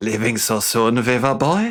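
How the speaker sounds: put-on German accent, taunting villain voice. Voicing a character's line while watching, giving him a German accent. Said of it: "let's give him a German accent".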